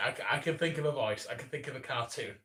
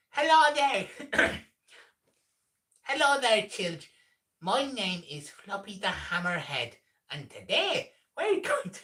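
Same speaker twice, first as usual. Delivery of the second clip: high-pitched, bad put-on Irish accent; 8 semitones higher, 4 dB louder than usual. Trying out a character greeting children, Floppy the Hammerhead, high Irish accent. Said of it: "I'm kind of doing like a high pitched Irish accent".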